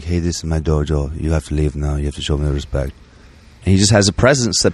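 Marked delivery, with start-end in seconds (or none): 0.0-2.9 very quiet, hushed, lower and quieter. Acting out how he confronts crackheads who come into his dojo; very quiet. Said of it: "He'll just come up very quietly".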